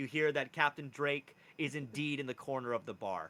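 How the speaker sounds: ordinary talk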